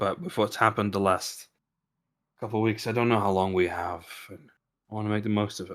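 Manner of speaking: whispering. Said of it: "I don't know why you felt the need to whisper that".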